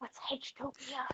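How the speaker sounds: whispering. Narrator voicing Ito as he gets closer to the player, whispering. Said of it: "He gets closer and whispers".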